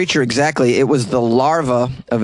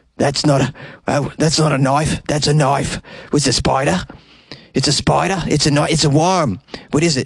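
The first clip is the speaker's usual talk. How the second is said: put-on Australian accent, played for fun; 2 semitones higher than usual. Joking about a surgeon finding a worm, in a put-on Australian accent. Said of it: "fun words to say with an Australian accent".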